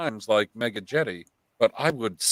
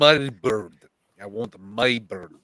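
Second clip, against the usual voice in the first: bad, crude, fake put-on Russian accent; 3 semitones lower than usual. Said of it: "in shit Russian accent".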